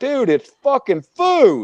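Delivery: mock very high, angry, drawn-out exasperated disbelief. Retelling being patted down and searched over cheesecake: retelling own angry reply. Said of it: "I'm pissed off".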